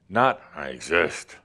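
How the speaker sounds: grouchy. Showing the wrong way to start the day with I exist: grumpy.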